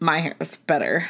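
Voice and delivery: put-on sassy, dismissive girl voice. Imagining a girl who turns up her nose, voicing her in a mock-sassy voice. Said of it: "that was my sassy voice".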